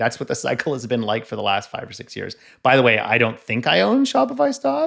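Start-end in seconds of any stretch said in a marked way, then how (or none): 2.6-4.9 voice jumping up about an octave higher. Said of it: "your voice goes up an octave trailing".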